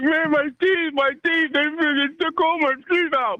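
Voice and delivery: mock tearful, high sobbing, crying. Retelling a young man waking up toothless: imitating someone crying. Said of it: "he's crying like".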